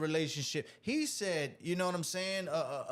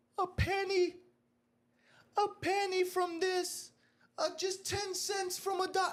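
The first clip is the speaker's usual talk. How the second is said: play-acted, very high, slow, drawn-out sobbing plea. Retelling a church collection where a lady pleaded: imitating a crying woman. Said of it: "You had a lady crying up there".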